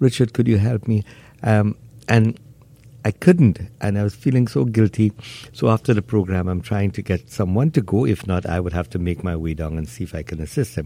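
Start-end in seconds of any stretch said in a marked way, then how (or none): 0.0-1.0 mock weeping, tearful crying voice. Retelling a caller's plea for help, imitating a crying voice. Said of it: "he would speak in a voice as if he was crying".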